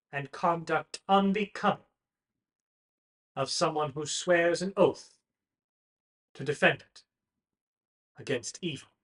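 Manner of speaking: booming announcement voice. Voicing a noble proclaiming a trial to the Colosseum: magically amplified proclamation. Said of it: "amplifies her voice across the Colosseum".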